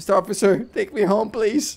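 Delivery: mock frightened, scared pleading, begging tone. Begging an officer to take them home: pretend scared pleading. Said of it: "I'm scared".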